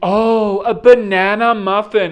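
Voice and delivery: acted, very loud, very slow, high little chuckle. Retelling what a woman said when she came back, with a little chuckle. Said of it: "and like a little chuckle".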